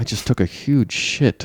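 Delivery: quiet, hushed, confiding whisper, close in. Retelling what was whispered in a museum: imitating Bjorn whispering. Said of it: "Bjorn whispers in my ear".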